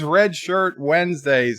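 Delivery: ordinary talk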